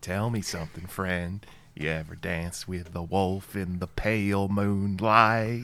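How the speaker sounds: a little southern twang. Opening the show with a movie line: Jack Nicholson impression. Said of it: "Is that line you're doing".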